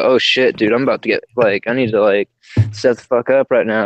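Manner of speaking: usual speaking voice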